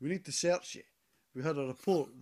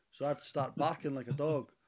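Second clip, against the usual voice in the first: plain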